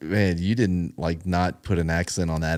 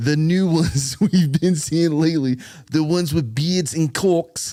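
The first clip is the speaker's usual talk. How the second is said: put-on British accent, higher; 9 semitones higher, 4 dB louder than usual. Reading a comedy special quote aloud: Ricky Gervais impression. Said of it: "I'll do it in this accent".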